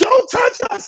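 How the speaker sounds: put-on screaming. Retelling what marchers screamed during a fight: imitating people screaming. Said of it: "you hear them screaming".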